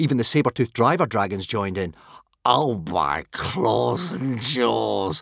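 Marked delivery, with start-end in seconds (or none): 2.4-5.2 slow drawl, jaws stretched out and lingering. One Eye reacts to the boys laughing at the dragon, drawled. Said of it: "drawled One Eye".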